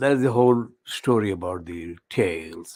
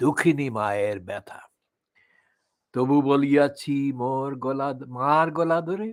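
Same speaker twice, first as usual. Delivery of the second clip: plain reading voice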